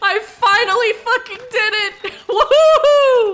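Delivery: very high, thrilled, excited screaming cheer. Finishing a long game challenge at last: screaming with excitement. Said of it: "I'm sorry for screaming".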